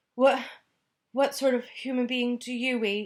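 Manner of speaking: high, quavering, trembling, frightened voice. A narrator reads a character's question to the giant: trembling.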